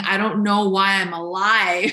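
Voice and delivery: put-on weeping, tearful crying voice. A mother recalls rocking her infant in the dark, retelling herself crying. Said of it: "And I was like crying".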